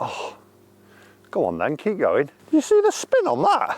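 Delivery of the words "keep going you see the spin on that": voice gone very high, swooping and sing-song. Watching their golf shot spin on the green, with an unexpectedly high-pitched voice. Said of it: "Don't know why my voice has gone so high".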